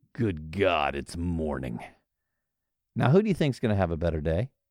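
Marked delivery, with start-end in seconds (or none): 0.2-1.8 very low, slow, dragging growl. Telling how a pessimist dragged himself out of bed and peeked outside, growled. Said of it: "and growled".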